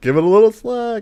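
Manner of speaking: very high-pitched frantic yelling. Game master voicing Anadius calling through the storm to Kira: Anadius yelling frantically. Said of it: "as he yells frantically".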